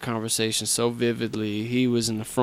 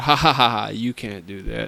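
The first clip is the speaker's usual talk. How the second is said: put-on laughing, words through chuckles; 4 dB louder than usual. Telling how the speaker's dad answered, imitating dad laughing while talking. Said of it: "my dad laughingly said".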